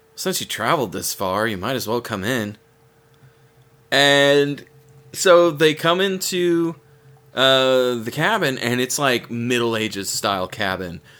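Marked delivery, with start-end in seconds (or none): 0.2-2.6 soft, hushed, hesitant, uncertain, quick murmur. Telling a story where an old man finally invites the visitors in, soft uncertain voice. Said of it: "in a soft, uncertain voice".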